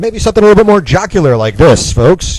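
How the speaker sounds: jocular, very high, loud, booming sportscaster voice. Demonstrating different speaking voices to an audience, jocular sportscaster voice. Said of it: "kind of a sportscaster voice".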